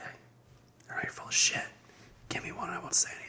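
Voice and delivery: quiet whispering in character. Voicing a character who tells another he's lying and asks for one: whispering in character. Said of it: "What are you whispering about?".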